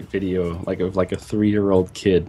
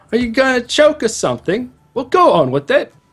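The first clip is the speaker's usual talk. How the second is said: high, loud, put-on Victorian London accent. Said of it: "That accent sounded like some Victorian Londoner".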